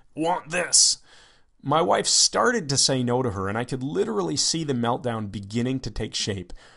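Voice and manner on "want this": mock caveman child voice, higher pitch. Retelling what she said while pointing: cave child voice. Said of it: "in her cave child voice".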